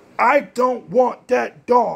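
tearful, high, loud screaming outburst. Anna, holding her chewed slippers, runs downstairs to her dad: screaming. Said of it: "she screamed".

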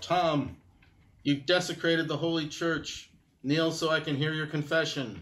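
calling out loudly at full voice. Voicing a character who yells out to Tom, yelling out. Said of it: "I yell out".

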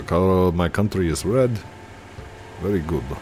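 put-on Russian accent in English. Announcing he has to do it, speaker goes into a put-on Russian accent. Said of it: "I've got to do the Russian accent. Russian accent".

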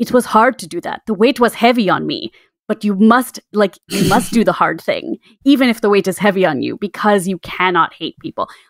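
bad put-on Austrian bodybuilder voice. Quoting a video message, doing the worst Arnold Schwarzenegger impression. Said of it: "That was the worst Arnold, uh, impression".

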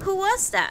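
bewildered. Narrator reads Tommy's question to the narrator, in a bewildered voice. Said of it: "he asked in a bewildered voice".

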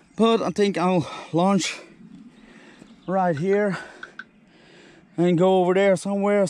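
winded, short on air. Showing viewers a drop zone while out of breath. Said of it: "Sorry for my out of breath here".

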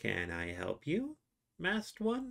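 squeaky, very high, swooping little gnome voice. The narrator voices a gnome speaking to a player's character: distinct gnome voice. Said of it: "you hear the distinct voice from the gnome".

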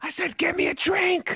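forceful stage whisper, very high, hissed, drawn out. Imagining ordering in a packed club without being too loud: pretend loud whisper. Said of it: "loud whisper".

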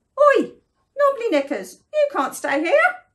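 loud, quick, squeaky little mouse voice. Mouse calls out from behind the dragon Saffy, in a little squeaky voice. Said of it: "a little voice squeaked".

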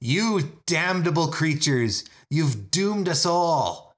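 acted furious scream. Voicing a figure thrusting a bony finger in someone's face: screaming in character.

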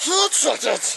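mock creature voice, very high. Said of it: "That's my Gollum impersonation".

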